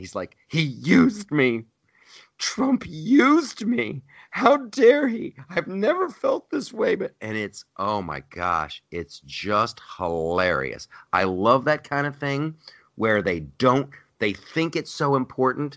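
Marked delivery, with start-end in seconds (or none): 0.5-6.9 mock, very high voice, holding back tears. Retelling an emotional scene, imitating Rod Rosenstein holding back tears. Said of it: "he's trying not to cry".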